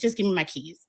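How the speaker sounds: ordinary talk, nothing marked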